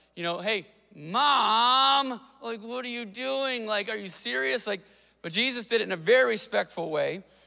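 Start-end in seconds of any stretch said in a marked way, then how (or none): 0.4-4.7 put-on sassy kid voice, word mom drawn out. Explaining how Jesus's reply to his mother could have sounded, imitating a kid talking back. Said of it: "it could have sounded a little bit like a lot of our kids do".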